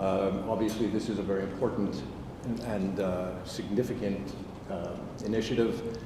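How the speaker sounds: very quiet voice. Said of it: "Could I ask you to speak louder".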